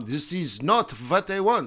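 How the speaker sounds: put-on speaking with a German accent. Imitating a central banker lamenting the strong euro: imitating Christine Lagarde, German-sounding. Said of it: "that sounded German".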